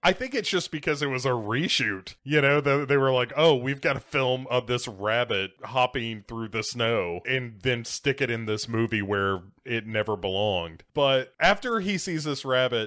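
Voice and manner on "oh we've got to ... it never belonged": ordinary talk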